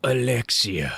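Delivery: faint weak voice. Voicing Alfred, mortally wounded, calling to the capsule: faint tone. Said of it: "in a faint tone".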